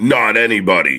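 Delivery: shouting. Joining in after a wrestling promo on screen: yelling. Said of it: "It's 'cause I'm yelling".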